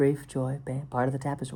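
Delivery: terrible, hokey put-on guru voice. Musing on grief and loss, slipping into an impression of a terrible guru. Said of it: "an impression of a terrible guru".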